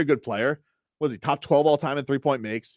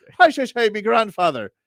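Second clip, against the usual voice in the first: fake Irish accent, pitched higher; 7 semitones higher, 4 dB louder than usual. Imitating Ryan Fitzpatrick trying to talk like an Irish guy: fake Irish accent. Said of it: "Fitzpatrick would try and talk like an Irish guy".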